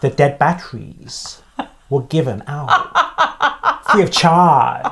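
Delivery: put-on Chinese accent. Telling a joke after being asked to do an accent: Bruce Lee accent. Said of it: "I'm trying to do like Bruce Lee".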